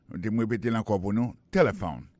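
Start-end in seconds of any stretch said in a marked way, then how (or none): 1.6-2.1 téléphone with stress on first syllable té. Showing how English says téléphone: stress on first syllable of téléphone. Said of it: "l'accent tonique l'a tombé sous premier syllabe".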